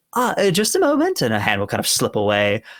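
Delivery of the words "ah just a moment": put-on very high, coy, teasing voice in wrong accent. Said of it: "sorry, that's not her accent".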